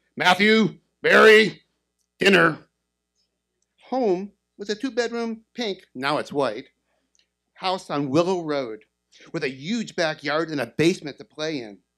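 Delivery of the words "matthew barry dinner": very loud, booming, barked drill-sergeant bellow. Retelling how dad called the kids home, bellowing in his sergeant voice. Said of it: "my dad bellowed in his sergeant voice".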